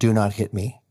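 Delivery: ordinary delivery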